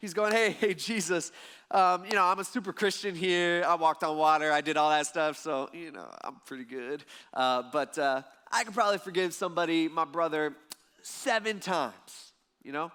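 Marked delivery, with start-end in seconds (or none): 0.3-12.3 slow, smug, puffed-up self-satisfied boasting. Retelling how Peter boasts to Jesus with his chest out: imitating Peter bragging. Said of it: "he's probably got his chest out high".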